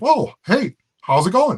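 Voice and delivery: put-on high, loud, chirpy voice.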